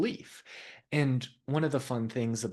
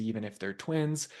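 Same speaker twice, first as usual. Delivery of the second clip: plain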